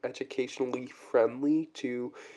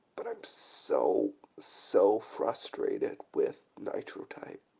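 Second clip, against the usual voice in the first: low, tearful voice, talking through crying; 6 semitones lower than usual. A Nitro Type player talking about the game, speaking while crying. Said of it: "I'm crying. I need to stop crying".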